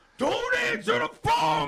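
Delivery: mock panicked freakout. Retelling the phone ringing from Pompano Beach: imitating own panicked shout. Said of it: "So I freaked out".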